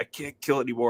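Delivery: put-on crying, sobbing voice. Retelling a funny movie scene where a character breaks down, imitating someone crying. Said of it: "he just starts like crying".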